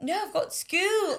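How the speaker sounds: high, slow, mock British accent.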